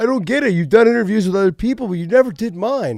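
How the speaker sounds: acted, high, whining, near-crying complaining voice. Retelling how an interviewer sounded at the interview's start: imitating Ariel Helwani whining. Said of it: "He was whining and crying".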